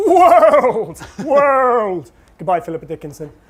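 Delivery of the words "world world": huge, very loud, big booming voice, high pitch. Introducing the next topic in a storytelling lesson, big world voice. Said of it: "That's my world voice".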